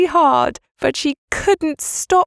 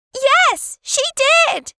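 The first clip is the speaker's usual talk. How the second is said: very high-pitched, shrill shouting; 12 semitones higher than usual. Narrator voices Maggie answering her aunt's accusation, shouting. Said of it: "shouted Maggie".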